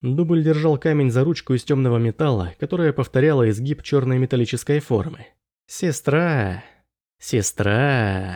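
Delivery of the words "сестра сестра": drawn-out, drawling with mockery. A man addresses a woman, in a mocking drawl. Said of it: "Насмешливо протянул он".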